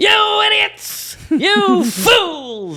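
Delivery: "fools" drawn out, high-pitched and slow. Quoting favourite voice performances from Disney films: Cruella de Vil voice. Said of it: "Cruella de Vil's voice".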